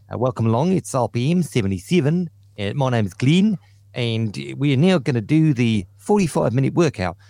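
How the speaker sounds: put-on New Zealand accent. Imitating the instructor of a New Zealand workout class: imitating New Zealand accent. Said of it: "they speak like that 'cause, uh, they're New Zealand".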